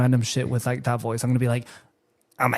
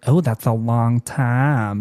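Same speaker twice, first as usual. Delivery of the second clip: put-on flamboyant man's voice, much slower. Retelling a conversation with a man at work, imitating a flamboyant man's voice. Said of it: "I started like using his like voice".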